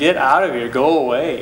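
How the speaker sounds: plain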